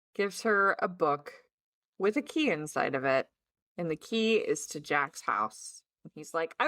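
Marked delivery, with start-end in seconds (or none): none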